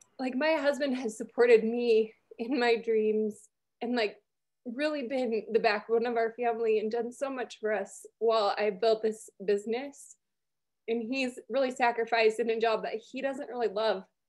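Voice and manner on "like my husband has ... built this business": choked up, on the verge of tears. The speaker tells how her husband has supported the family, on the verge of tears. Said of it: "I'm going to cry".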